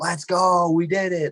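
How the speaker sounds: very high, stretched-out, celebratory screaming. Retelling finally completing a zombies map: retelling screaming and yelling. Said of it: "started screaming and yelling".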